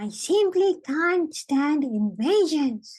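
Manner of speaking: tiny, squeaky, high-pitched little mouse voice. In the story, a mouse speaks up after the boy talks: tiny little voice. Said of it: "said a tiny little voice".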